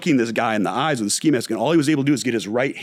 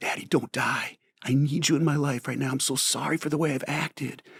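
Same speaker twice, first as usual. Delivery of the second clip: put-on, earnest, begging plea; 3 semitones higher, 7 dB quieter than usual. Retelling a daughter pleading with her dying father: imitating pleading. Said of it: "she starts just pleading with him".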